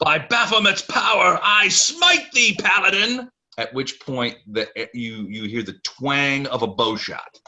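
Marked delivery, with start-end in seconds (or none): 0.0-3.3 very high, shrill, loud battle cry. Voicing a foe who challenges the paladin: man yelling a battle cry. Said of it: "a man's voice, yell out".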